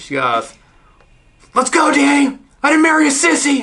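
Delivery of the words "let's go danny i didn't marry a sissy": yelling, high and loud. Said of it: "I just hear her yelling".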